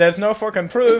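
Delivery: thick put-on Irish accent. Imitating someone's dad denying there is proof, in a super thick accent. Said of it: "he's just got a super thick accent".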